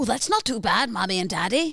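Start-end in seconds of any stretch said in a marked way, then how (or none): 0.9-1.7 rough, tried-out Southern Irish accent. Speaker tries out their Irish accent for the others: attempted Irish accent. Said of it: "I'm trying to do me Irish".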